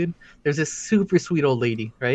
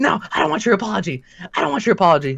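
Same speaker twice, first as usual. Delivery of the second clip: pissed-off retort, pitched up and angry; 6 semitones higher, 3 dB louder than usual. Retelling a customer's complaint about terrible service: imitating an angry customer. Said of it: "was super pissed off".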